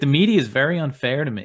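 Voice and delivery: loud swooping whine, pitched high. Mocking a politician's complaint about the media: whiny DeSantis impression. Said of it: "He just sounds like a whiny".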